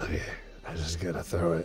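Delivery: muttering under breath. Voicing a character who closes their eyes before a throw: muttering under breath. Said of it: "hear me under my breath being like".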